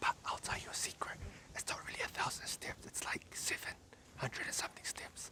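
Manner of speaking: hushed, very quiet, barely audible whisper. Speaker sharing a secret as many people walk past: whispering. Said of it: "I'm whispering because there's so many people walking past".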